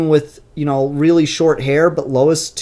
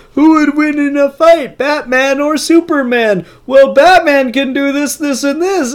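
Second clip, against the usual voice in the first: put-on nerdy voice; 8 semitones higher, 4 dB louder than usual. Talking about battle-forum arguments, the speaker slips into a stereotypical nerd voice. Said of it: "that's my stereotypical nerd voice".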